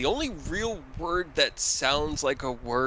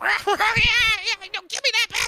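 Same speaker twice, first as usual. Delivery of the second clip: shrieking goblin horde, higher and louder; 6 dB louder than usual. Voicing goblins squabbling ahead of the party: goblins screaming. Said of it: "the goblins ahead of you screaming in goblin".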